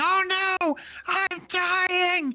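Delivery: screaming character voice. Narrating the game, the speaker voices Watt as he starts: Watt screaming. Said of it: "Watt starts screaming".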